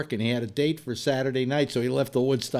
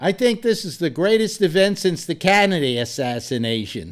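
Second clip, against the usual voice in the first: raised, high, put-on Boston accent; 5 semitones higher, 6 dB louder than usual. Retelling a friend's quote to a reporter: imitating Abby's Boston accent. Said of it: "this is in his Boston accent".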